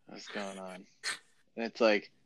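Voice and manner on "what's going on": put-on lifeless voice, lower and quieter. Retelling calling a friend who answers: imitating Vance sounding half dead. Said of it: "we would call you and you're like".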